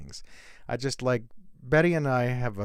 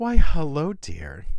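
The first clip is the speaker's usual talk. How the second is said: high, very loud put-on voice, called out; 5 semitones higher, 11 dB louder than usual.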